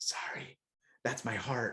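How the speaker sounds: slow, hushed whisper. Retelling whispering to the guy next to him during a movie: retelling a whisper. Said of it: "I whispered over to the guy".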